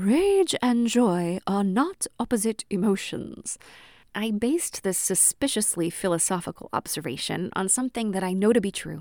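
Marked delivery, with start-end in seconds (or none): 0.0-3.6 put-on slow, loud princess character voice. Speaker repeats a line for humor: put-on philosopher princess voice. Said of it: "I'm going to say it in the voice of the philosopher princess".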